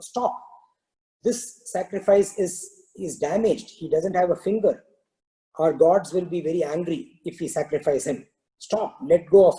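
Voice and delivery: ordinary talk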